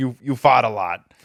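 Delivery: thick, heavy put-on New York accent. Retelling what his old strength coach said to him, in a thick New York accent. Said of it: "but thick New York accent".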